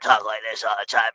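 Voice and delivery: hoarse, quiet drill sergeant voice, worn out. Explaining what happens after yelling too much, in a drill instructor voice. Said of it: "gotta talk like a drill instructor".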